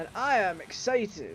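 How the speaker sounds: usual speaking voice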